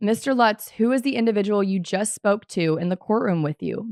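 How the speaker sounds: plain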